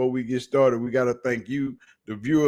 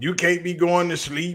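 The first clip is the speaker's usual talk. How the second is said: higher-pitched put-on scream; 5 semitones higher than usual. Retelling what Rex Ryan was screaming about Shedeur Sanders: imitating Rex Ryan screaming. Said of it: "the one that was screaming".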